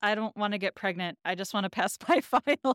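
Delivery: mock dead-straight, bone-dry deadpan delivery. Retelling Felicity's answer to Sean offering her fruit: retelling a deadpan reply.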